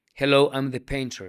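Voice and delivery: put-on thick, strong Arabic accent in English. Retelling a phone call, the caller introduces himself in strong Arabic accent in English. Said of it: "con acento árabe, muy además muy ca- marcado".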